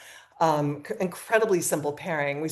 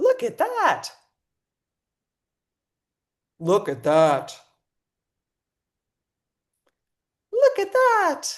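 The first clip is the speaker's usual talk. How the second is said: very high, swooping, drawn-out put-on character voice; 12 semitones higher than usual. Speaker does the audio of a clip himself, doing male and female voices. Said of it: "I can do male and female voices, so I'll do the audio".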